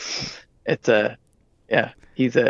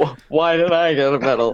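agonized, hurting voice; 2 semitones higher than usual. Imitating Chewbacca at the medal ceremony: Chewbacca in agony. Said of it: "It always sounds like he's, like, he's in agony".

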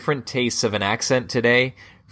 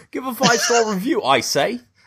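put-on Cockney accent, much higher pitch; 10 semitones higher than usual. Urged to try Cockney after a posh attempt, doing a Cockney accent. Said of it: "You got to do Cockney".

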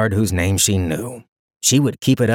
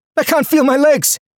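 put-on very high, panicking boy's cry; 4 dB louder than usual. A narrator voices the boy repeating his words, panicked boy. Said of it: "Panic entered the boy's words".

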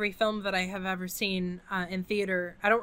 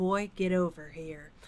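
put-on slow, creepy, beckoning delivery; 2 semitones lower, 4 dB quieter than usual. Quoting a movie line, imitating Ashley Judd: creepy Ashley Judd line delivery. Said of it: "that super creepy line that Ashley Judd delivers".

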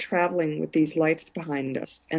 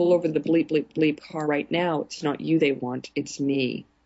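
ordinary delivery

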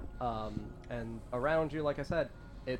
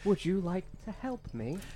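put-on feminine voice, pitched up; 7 semitones higher than usual. The narrator voices Lolth speaking inside Olive's head: feminine Lolth voice. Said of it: "a feminine voice again".

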